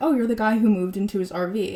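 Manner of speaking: normal talking voice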